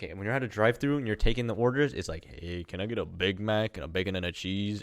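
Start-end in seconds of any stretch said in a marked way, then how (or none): 2.3-4.8 put-on soft, dull, flat, no-energy monotone drone. Describing drive-through order taking, he imitates the flat monotone everyone uses. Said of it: "Everyone's like monotone".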